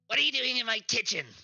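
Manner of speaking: strained put-on goblin character voice. A game master voices a goblin confronting the players in its kitchen: goblin voice. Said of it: "I'm going to ruin my voice".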